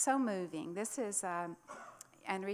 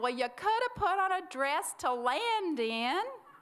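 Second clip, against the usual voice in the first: raised, pitched-up yelling; 8 semitones higher, 7 dB louder than usual. Retelling how a husband on the dock answered his wife: imitating him yelling back. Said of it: "he yelled back".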